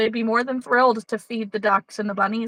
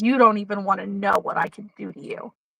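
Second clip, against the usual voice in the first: mock cold, menacing child voice. Retelling what a child said to his grandma: imitating a child's cold threat. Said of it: "he gets this, like, dead look in his face".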